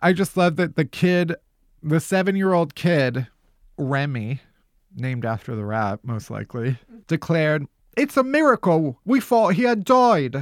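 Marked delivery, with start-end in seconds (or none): 8.0-10.4 put-on, pitched-up London Cockney twang. Quoting a seven-year-old kid from a news story: put-on cockney accent. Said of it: "That's my accent".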